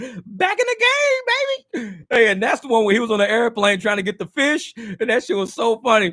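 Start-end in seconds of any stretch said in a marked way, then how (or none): 0.0-2.0 high, swooping, drawn-out comic drawl. Quoting a favorite comedy bit after laughing: Dave Chappelle impression. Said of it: "That's my Dave Chappelle shit".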